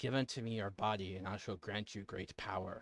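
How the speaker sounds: soft, low, hushed half-whisper. The game master voices the being inside a player's character: half-whispering. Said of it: "the being inside you is going to whisper".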